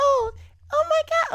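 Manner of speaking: put-on very high, very drawn-out babyish childlike gasp. Mocking how a grown woman talks in a childlike manner: imitating a childlike manner of talking. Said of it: "they talk in a very, like, childlike manner".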